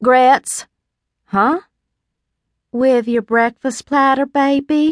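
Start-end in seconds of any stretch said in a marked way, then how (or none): 2.7-4.9 tender, affectionate, lightly pitched-up coaxing voice. A woman offering breakfast speaks to the narrator; tender. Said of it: "she said tenderly".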